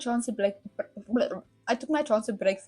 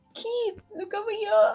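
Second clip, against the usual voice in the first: crying out, calling out; 12 semitones higher, 4 dB louder than usual. Reading a story aloud, voicing girls in a crowd: calling out. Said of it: "the girls' cries".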